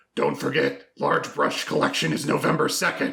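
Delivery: very dark, rough, creaky, scary menacing rasp. Retelling what he said to kids passing his house, in a very dark, scary voice. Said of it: "in a very dark, scary voice go".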